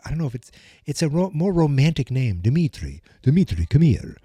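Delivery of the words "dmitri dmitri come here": put-on vampire voice. Trying out the name Dmitri, in a Dracula voice. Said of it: "now I sound like Dracula".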